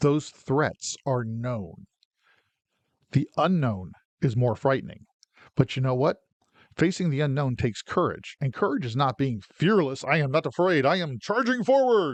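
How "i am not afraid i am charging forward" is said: dramatic comic-book movie delivery, swooping pitch. Illustrating fearlessness that is not courage: comic-book movie voice. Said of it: "especially in that comic book voice".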